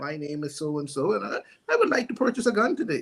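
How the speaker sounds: mock polite, put-on proper-sounding voice. Acting out someone walking in to buy a gun: imitating a put-on proper voice. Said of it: "all us can act like we got sense".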